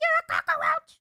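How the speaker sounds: fake gravelly streamer voice. Trying the impression again with scratch and raspiness: Iron Mouse impression with raspy scratch. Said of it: "she adds a little scratch and raspiness".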